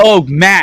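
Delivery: sudden full-volume, high-pitched yell. Calling out to another speaker to get their attention: yelling. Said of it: "Why are you yelling at me?".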